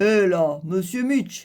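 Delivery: heavy, big, deep, gruff voice. A narrator voices a strange little figure confronting Mitch: big gruff voice. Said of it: "fait-il d'une grosse voix".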